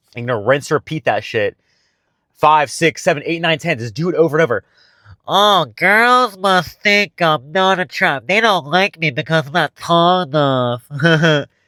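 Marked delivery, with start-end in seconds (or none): 5.3-11.5 deliberately dumb, dopey voice, slow and high. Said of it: "your old limiting belief over and over in a stupid fucking voice".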